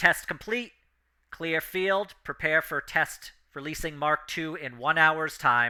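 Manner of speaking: loud, resounding, booming announcement voice. Game narrator voices an announcement the players hear from above, booming voice. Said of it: "in a kind of booming voice".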